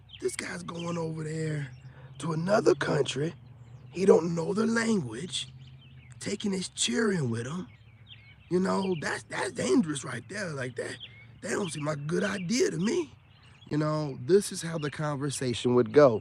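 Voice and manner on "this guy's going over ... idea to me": put-on, higher-pitched old man voice.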